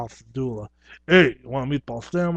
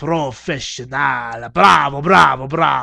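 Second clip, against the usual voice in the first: put-on booming, very loud Italian-sounding circus clown accent; 6 dB louder than usual. Speaker explains where his clown act came from, Italian-sounding Quidam clown voice. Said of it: "more Italiano kind of sounding".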